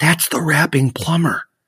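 put-on thrilled little remark. Retelling a woman telling her husband she recognized the speaker, imitating an excited remark. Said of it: "with excitement in her voice".

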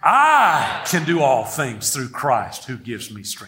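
strong stress on the opening word I. Leading others to repeat a line, stressing the first word I. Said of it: "Emphasize with me the first word. Say it like this".

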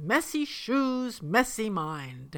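rough, very gruff voice. Retelling how a teacher threw students' shoes on the floor, in a very gruff voice. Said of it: "said in a very gruff voice".

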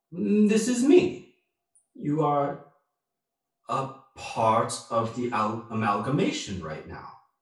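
put-on otherworldly voice. Voicing a warlock's patron speaking inside the character's head: voice of the amethyst amalgamation. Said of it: "you hear a voice basically say".

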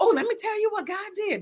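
eager exclamation. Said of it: "I'm like".

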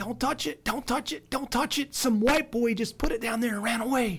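shrill, very high-pitched shouting yell. Retelling a neighbor on her porch warning about a box: imitating neighbor yelling. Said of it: "she was yelling at me".

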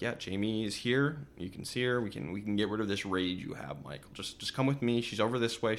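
plain

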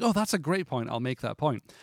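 ordinary delivery

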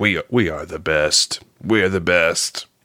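put-on boastful robot voice. Imitating a robot character from the film, mimicking its hubris. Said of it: "his, like, hubris".

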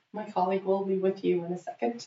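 plain

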